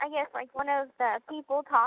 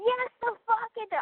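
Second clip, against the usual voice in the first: high-pitched screaming; 8 semitones higher than usual. Retelling reacting to a TV show: imitating own screaming. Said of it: "I was screaming at the T V".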